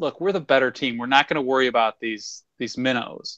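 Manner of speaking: plain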